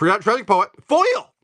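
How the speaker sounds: voice cracking at very high pitch. Listing off Magic: The Gathering cards, the speaker's voice cracking. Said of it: "My voice just cracked".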